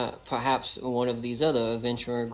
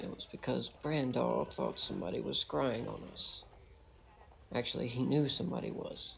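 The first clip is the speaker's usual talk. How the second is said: hushed, close, gentle, soft confiding whisper; 8 dB quieter than usual. Leaning in with an arm round a companion's shoulder: gentle whisper. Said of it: "very gently whisper".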